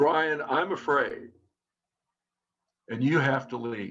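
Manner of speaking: mock calmest possible, calm, even voice. Retelling facing a man who got in their face with accusations; retelling a calm voice. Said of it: "in my calmest voice I can muster".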